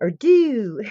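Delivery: high-pitched, with every word dragged out long. Trying to impersonate Tracy, the speaker is imitating Tracy, drawn-out words. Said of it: "she always drags her words out".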